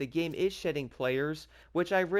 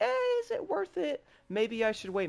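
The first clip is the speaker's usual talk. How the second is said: voice jumps very high, swooping, sing-song, doubtful; 10 semitones higher than usual. Speaker voices hesitant players who see negative reviews, in a high-pitched voice. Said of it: "my voice got high there".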